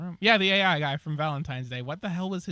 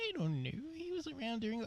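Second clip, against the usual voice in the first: pouty, slightly higher-pitched voice; 10 semitones higher, 11 dB quieter than usual. Voicing a game character's line in a pouty face: pouty, slightly higher-pitched voice. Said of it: "a little higher pitched".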